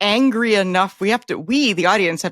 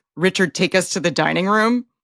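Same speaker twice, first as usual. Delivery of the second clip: ordinary talk, nothing marked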